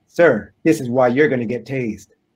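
ordinary talk

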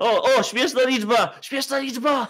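high, loud mock excitement.

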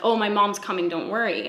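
ordinary talk

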